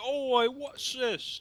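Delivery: put-on very high, slow, drawn-out London accent. Describing a game character who sounds very British: London accent. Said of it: "He's like straight from London".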